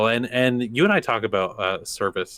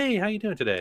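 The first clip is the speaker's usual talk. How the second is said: bright, friendly, very high-pitched voice; 11 semitones higher than usual. Showing how to greet people in a friendly tone, slightly higher voice. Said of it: "maybe raise the octave of your voice a little bit".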